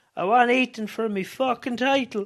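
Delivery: put-on loud, high-pitched, angry Italian accent. Recapping a match, the speaker quotes Tony afterwards in a mock Italian accent as Tony. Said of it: "because that's how his Italian accent sounds".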